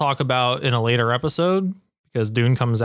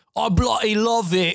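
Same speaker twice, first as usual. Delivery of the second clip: squeaky voice, badly done; 9 semitones higher than usual. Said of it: "The worst impression ever".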